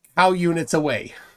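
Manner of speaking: ordinary talk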